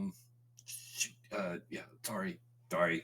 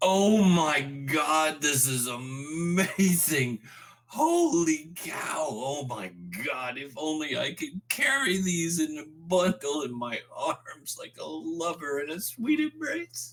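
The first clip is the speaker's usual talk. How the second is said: very high, very loud, swooping thrilled shouting; 9 semitones higher, 10 dB louder than usual. Acting out what Terry suddenly hears, excited yelling. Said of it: "Especially with him yelling right now".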